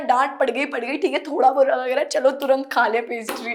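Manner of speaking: ordinary talk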